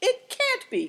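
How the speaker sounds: indignant outcry, very high and loud. Answering a warning that the one coming may be someone else, cried indignantly. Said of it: "cried Seven Stars indignantly".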